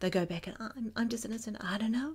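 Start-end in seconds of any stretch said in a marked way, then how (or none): 0.9-2.1 feeble, small weak voice, quick. Speaker demonstrating how people sound when claiming innocence, weak voice. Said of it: "people use a weak voice".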